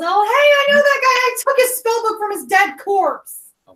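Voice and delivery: very high-pitched, loud shout. Speaking as Theo, who yells to the enemy: Theo yelling. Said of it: "Theo yells".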